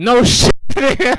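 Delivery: loud, high-pitched, exasperated delivery.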